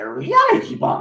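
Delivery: odd, creature-like alien sci-fi villain voice. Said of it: "sounds a bit like Yoda".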